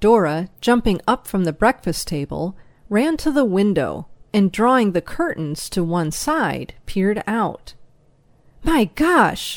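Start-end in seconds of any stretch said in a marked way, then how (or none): 8.6-9.6 sudden, high exclaimed outburst. Peering out the window at the horses outside, she exclaims. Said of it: "she exclaimed".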